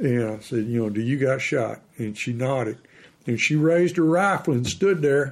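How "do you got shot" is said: whispered delivery. Retelling a hunt, quietly asking a partner if she has a shot: retelling a whisper. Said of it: "you whispering".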